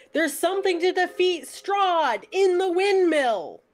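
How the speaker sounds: yelling really loudly. Playing a character who calls out to the others about the windmill: yelling really loudly. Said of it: "Todd's just gonna yell really loudly".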